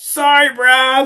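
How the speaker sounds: very high-pitched, called-out yell. Retelling what a driver yelled from his car: imitating Jared yelling. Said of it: "I hear him yell from his car".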